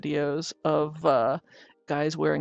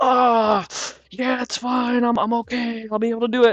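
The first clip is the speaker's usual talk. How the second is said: loud, high, forced through gritted teeth; 7 semitones higher, 7 dB louder than usual. Retelling how tattooed men cope with pain: imitating talking through gritted teeth. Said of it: "kinda gritting their teeth and going".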